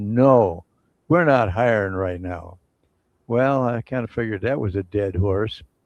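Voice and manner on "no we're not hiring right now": gruff, no-nonsense voice. Retelling the man's answer when called about the job application, mock-gruff. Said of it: "in a gruff voice".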